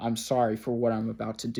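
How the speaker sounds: imitated flat, monotonous, deadpan delivery. Speaker retells a cryptic phone call received at work, imitating a flat deadpan tone. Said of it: "monotonous deadpan tone in her voice".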